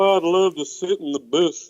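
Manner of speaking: West Texas local accent. Mocking how people in the South say booth: Hank Hill voice. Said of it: "that's like some Hank Hill thing".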